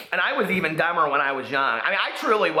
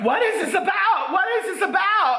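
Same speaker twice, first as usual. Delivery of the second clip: put-on upset voice, higher pitch. Retelling what mom asked after finding the journal: imitating upset mother. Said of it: "She was so upset".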